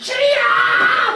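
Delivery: high, slow, loud shout full of desperation. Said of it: "막 이렇게".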